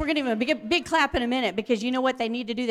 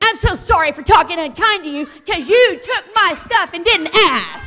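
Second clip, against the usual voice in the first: hollow, insincere sorry with an unkind turn; 6 semitones higher, 9 dB louder than usual. Showing a child how not to apologize: fake unkind apology. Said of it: "let me show you what she didn't do".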